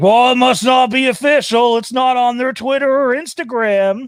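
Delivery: high, loud, mocking put-on voice. Describing replies from people to a tweeted promotional clip, mocking imitation of commenters. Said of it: "I don't mean to mock them. I just can't help but go into this voice".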